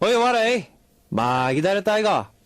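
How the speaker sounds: Busan Korean accent. Greeting listeners at the start of the show: busan dialect. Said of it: "that was a Busan dialect that I u-, just used".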